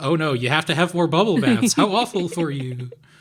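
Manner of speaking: sarcastic, put-on pity and fake sympathy. Repeating an earlier remark to show how it was meant: sarcastic. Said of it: "I was being sarcastic".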